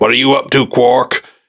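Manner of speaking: put-on stern lawman voice. Retelling a cartoon scene, imitating Odo questioning Quark. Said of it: "And he's Odo".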